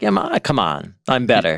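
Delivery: mocking, put-on voice. Retelling what the husband says to his grieving wife: imitating Elkanah. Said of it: "and the husband's like".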